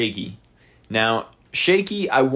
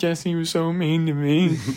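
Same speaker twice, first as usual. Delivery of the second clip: put-on sobbing with pitch much higher; 6 semitones higher than usual. Imagining Michael Strahan's tell-all interview, the speaker quotes him, mock-sobbing. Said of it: "he's like sobbing and saying".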